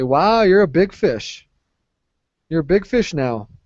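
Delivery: teasing sarcastic tone. Showing a learner how to tease a friend who became boss: sarcastic. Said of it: "it's got sarcasm to it".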